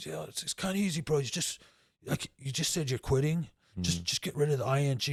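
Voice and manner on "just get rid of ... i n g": normal talking voice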